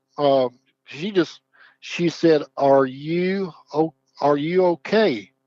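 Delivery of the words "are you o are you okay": mock small, slow, worried, concerned voice. Recounting a phone call, the speaker quotes a woman's first question, imitating a concerned voice. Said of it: "Just like in a concerned voice".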